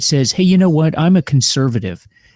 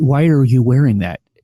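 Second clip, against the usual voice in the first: put-on whisper. Retelling what a grocery store worker whispered to him: imitating a whisper. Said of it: "she whispers to me".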